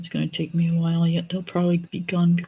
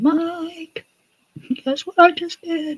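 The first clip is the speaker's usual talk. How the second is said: slow scream, very high and very slow, stretched; 12 semitones higher than usual. Acting out a future moment in the house: imitating someone screaming. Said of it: "you'll be screaming".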